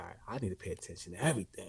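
fast, hushed whisper.

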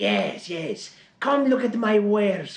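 high peddler's calling-out voice. Voicing a poor hunched man at a caravan: Gazeem from Aladdin style. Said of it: "he comes out in sort of a Gazim from, uh, Aladdin style".

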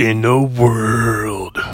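deep movie-trailer voice. Talking about wanting the movie voiceover job, doing a deep movie-trailer voice. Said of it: "The guy with the really deep voice who goes".

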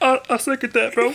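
squeaky, very high-pitched put-on voice. Speaking for someone as a joke: impression of Julio. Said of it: "That's my impression of Julio".

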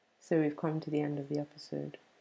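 sad tone. Closing the podcast episode with a co-host, sounding sad. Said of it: "Why do you sound so sad?".

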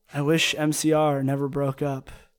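muttered, mumbled speech. A player's character standing at the window starts to speak: muttering. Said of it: "I start muttering".

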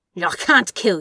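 gritted-teeth delivery. Narrator reading the demon's reply to the angel Aziraphale, through gritted teeth. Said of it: "Said the demon through gritted teeth".

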